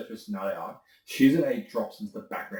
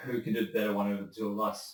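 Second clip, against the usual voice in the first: ordinary talk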